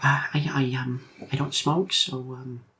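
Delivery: speaking very softly. Voicing a nervous woman answering a looming stranger: very quiet talking. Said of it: "She's talking very quietly".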